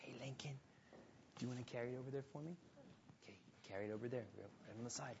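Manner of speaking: quiet, hushed side remark.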